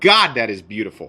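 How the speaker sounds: thrilled, gushing, excited yelling. Admiring the zirconium pivot collar on a knife, yelling in excitement. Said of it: "Sorry, I just yelled".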